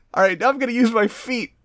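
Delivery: very high-pitched, jeering, mocking, taunting tone. Retelling a fight, one fighter taunts his opponent before the other transforms: retelling a taunt.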